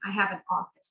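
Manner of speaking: ordinary delivery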